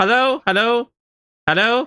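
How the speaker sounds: shrill, far-carrying yell, pitched way up. Player walking down a riverbank in the game, calling out: yelling hello. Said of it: "I'm just like yelling hello".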